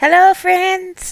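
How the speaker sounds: very high and loud, projected voice. Using the inflection she had when talking to the library books, Alice Haywood's inflection. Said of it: "it doesn't sound like her. It's like Alice Haywood's very much her inf- inflection".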